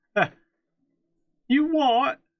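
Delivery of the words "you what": much higher, louder mock British accent, badly done. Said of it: "The worst British accent".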